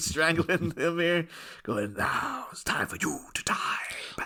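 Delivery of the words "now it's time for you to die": slow, breathy whisper, each word stretched. Voicing Bronk strangling him, in a Jack Palance impression. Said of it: "That's me going into a Jack Palance impression there".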